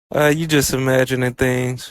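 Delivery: normal talking voice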